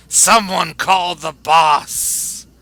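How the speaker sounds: loud, drawn-out shouted call. Voicing an enemy calling for help during combat: character shouting. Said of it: "shouts out".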